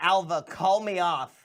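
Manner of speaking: very loud shouted yell. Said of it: "I'm gonna yell".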